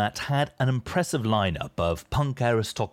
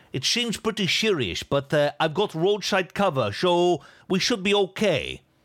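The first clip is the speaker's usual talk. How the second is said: heavy put-on Dutch accent, laid on thick, pitched up; 8 semitones higher than usual. Quoting the half-dutch driver after a sudden breakdown, attempted thick dutch accent. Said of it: "in an accent that was not even close to being as thick as what I just attempted to do there".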